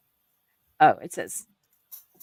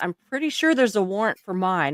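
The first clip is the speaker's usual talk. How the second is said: normal talking voice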